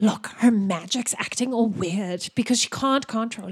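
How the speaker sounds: hushed whispering voice. Voicing a character whispering to another about a classmate's magic: whispering. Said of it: "Ulwana's gonna whisper to Malvin".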